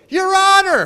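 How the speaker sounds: very high, very loud, shrill top-of-the-lungs shriek. Retelling a woman in a grocery store calling out to the speaker: imitating a woman screaming. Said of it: "this woman screaming at the top of her lungs".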